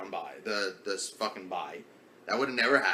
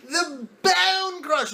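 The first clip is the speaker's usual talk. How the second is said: loud, very high, put-on British accent; 7 dB louder than usual. Urging a friend to say the team name, speaker demonstrates in a british accent. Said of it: "You gotta go like this".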